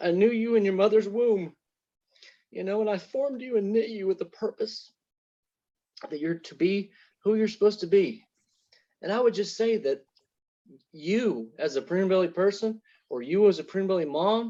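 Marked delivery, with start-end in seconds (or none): 0.0-8.2 tearful, choking up, voice catching. Speaking to listeners and quoting a Bible verse, choking up. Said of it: "I'm gonna cry again".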